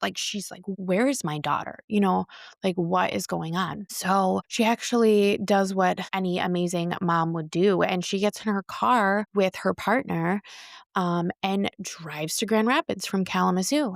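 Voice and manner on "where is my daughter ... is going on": put-on frantic voice. Retelling a missing woman's mother calling around: imitating a frantic mother. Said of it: "Ashley's mom is just frantic".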